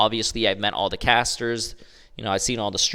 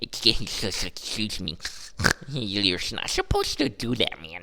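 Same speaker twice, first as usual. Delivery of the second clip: very slow, drawn-out, swooping, teasing, mocking gamer voice; 5 dB quieter than usual. Showing the gaming voice used to make fun of people: mocking gaming voice. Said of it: "that's my gaming voice when I make fun of people".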